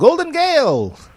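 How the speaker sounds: put-on very high, 1940s old-time radio announcer voice. Reading a comic cover line aloud: 1940s radio announcer voice. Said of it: "like in an old, like, nineteen forties voice".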